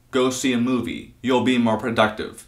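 ordinary talk

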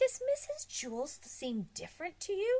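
hushed whisper. A boy quietly asks another boy about a woman: whispering. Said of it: "whispered Damien".

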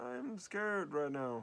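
frightened stuffed animal voice, high and slow. Showing how to give stuffed animals voices: scared stuffed animal voice. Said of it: "and this could be my scared one".

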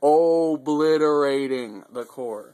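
obliterating said slowly and loudly, emphatic. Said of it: "I cannot emphasize that word enough".

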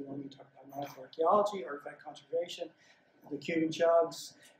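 ordinary talk

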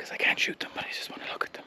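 quiet whispering. Vlogger explains, with deer nearby, why he is whispering. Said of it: "That's why I'm whispering".

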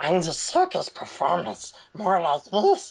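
weird, goofy creature voice. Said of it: "he has this weird, goofy voice".

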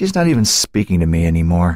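ordinary delivery

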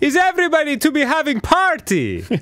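put-on Eastern European DJ accent. Speaker contrasts two of their dj impressions, doing an eastern european dj impression. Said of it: "my Eastern European DJ impression".

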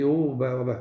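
plain

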